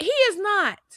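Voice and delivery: acted angry tone, pitched very high. Retelling a woman's reply to the radio hosts: imitating an angry retort. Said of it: "she got angry and was like".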